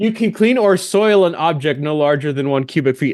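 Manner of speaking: ordinary talk, nothing marked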